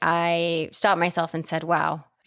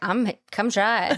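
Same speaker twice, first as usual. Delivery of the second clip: put-on nonchalant vampire voice, higher pitch; 4 semitones higher than usual. Retelling a movie scene, imitating Jerry's nonchalant voice. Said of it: "He's so nonchalant".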